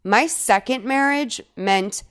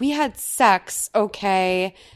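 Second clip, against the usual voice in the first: normal talking voice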